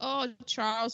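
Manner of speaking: ordinary talk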